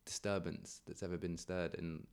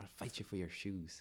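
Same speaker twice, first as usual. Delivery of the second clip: bad put-on Northern Irish accent, much quieter; 5 dB quieter than usual. Asked to do a Northern Irish accent, admitting you're bad at it, attempting one. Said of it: "Try and do a Northern Irish one".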